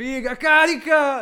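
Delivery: shrill, very high, very loud hollering. Speaker retells how the pensioners yelled during the matches; retelling a yell.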